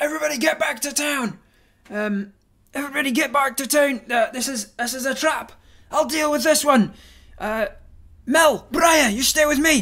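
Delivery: very loud, very high top-of-the-lungs shout. Voicing a character who warns everyone it is a trap: shouting at the top of lungs. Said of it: "you shout at the top of your lungs".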